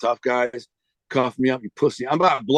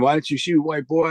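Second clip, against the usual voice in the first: mock accusing, demanding, challenging tone; 3 semitones higher than usual. Retelling how six cops screamed at him after his arrest: imitating cops screaming.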